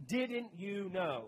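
snarky, sarcastic, with attitude. Acting out a twelve-year-old's reply, imitating a sarcastic tone. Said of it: "I hear that with sarcasm".

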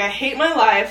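normal talking voice

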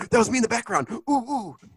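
excited, thrilled, high-pitched little oohs. Imitating a listener hearing himself on the podcast: imitating Kevin excited. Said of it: "he's gonna be excited".

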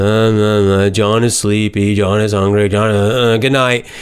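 flat, lifeless monotone, low and slow, one word drawn out. Showing how reading in a boring way sounds: boring, flat reading. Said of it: "if you just read in a boring way".

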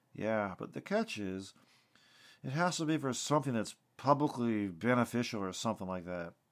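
ordinary delivery

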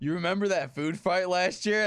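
plain

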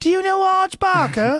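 bad fake Australian accent, very high and loud. Retelling what people in Sydney asked him, use a bad Australian accent. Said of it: "is that a bad accent?".

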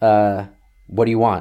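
rude tone of voice. Retelling a phone call where the dad answers: imitating a rude reply.

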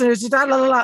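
nonstop, breakneck, high-pitched rattled-off chatter. A parent mimics his child's teacher at a conference, imitating very fast talking. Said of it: "he's just talking like this".

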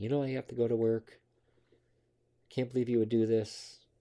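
play-acted, reproachful screaming. Retelling how an ex reacted to finding an empty pill bottle: imitating someone screaming. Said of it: "She starts screaming at me".

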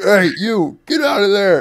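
shrill, very high-pitched, very loud scream. Retelling a cop shouting at them on the track: imitating a cop screaming. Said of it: "fucking screaming at us".

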